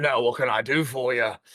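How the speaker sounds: rasping, rough voice. Voicing the elf blacksmith as she greets someone, in a raspy smoker's voice. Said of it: "She's got that real raspy voice like a smoker".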